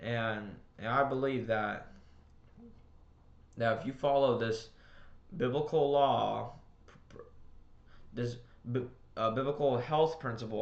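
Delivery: slow, stammering speech, tripping over repeated words. Speaker addressing listeners, stuttering. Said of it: "I'm sorry for stuttering".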